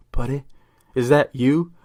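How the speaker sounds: ordinary delivery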